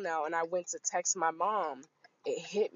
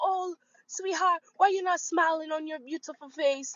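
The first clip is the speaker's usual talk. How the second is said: put-on Trinidadian grandma voice; 10 semitones higher than usual. Retell what the woman said to you while you waited in line, imitating a Trinidadian grandma. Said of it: "this Trinidadian grandma".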